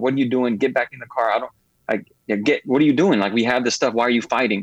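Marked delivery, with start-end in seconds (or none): none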